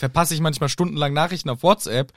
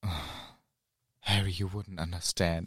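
very quiet, very low, put-on lovesick sigh; 7 semitones lower, 10 dB quieter than usual. Praising a narrator's reading of a favourite scene, imitating Stephen Fry's sighing Ron. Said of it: "sagte Ron mit einem Seufzer".

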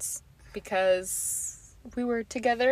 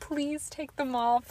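put-on tearful pleading, higher; 6 semitones higher than usual. Retelling begging a parent to remove new braces: imitating her own past crying. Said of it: "crying, being like".

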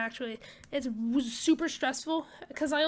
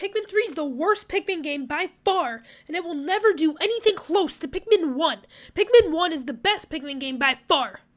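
loud, angry, heated, impassioned passionate ranting; 3 semitones higher, 7 dB louder than usual. Ranking the Pikmin games on a take; angry, passionate rant. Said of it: "I sounded angry".

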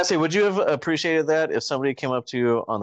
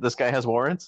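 ordinary talk, nothing marked

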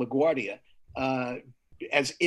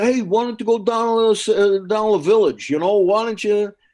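very loud, pitched-up, belted-out delivery; 7 semitones higher, 10 dB louder than usual. Retelling a phone call with Dom, Dom Irrera impression. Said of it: "That's my Dom Irrera impression".

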